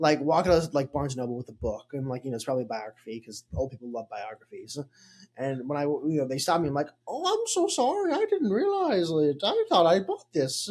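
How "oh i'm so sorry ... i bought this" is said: put-on Irish lilt, very high and slow. Imagining being stopped for walking out with a book, the speaker answers in a put-on Irish-sounding accent. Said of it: "Why are you Irish?".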